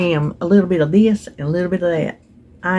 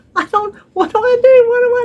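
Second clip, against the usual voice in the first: put-on panicked scream, higher and louder; 6 dB louder than usual. Retelling getting her hair caught in a jigsaw: imitating her own panicked screaming. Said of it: "And I'm screaming".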